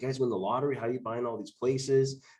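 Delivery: ordinary delivery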